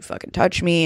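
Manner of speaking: ordinary talk, nothing marked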